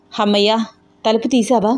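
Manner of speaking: ordinary delivery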